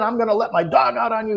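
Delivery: very high-pitched, shrieking, screaming yell. Retelling a back-and-forth with a man threatening to set his dog loose, retelling his screaming. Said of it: "he's screaming".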